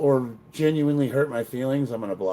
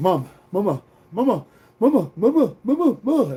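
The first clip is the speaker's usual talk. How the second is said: put-on high, loud, drawn-out, insistent nagging kid voice; 8 semitones higher, 5 dB louder than usual. Mocking a commenter as a pushy kid calling for mom: imitating a pushy kid calling mom. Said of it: "you're like that kid that is like".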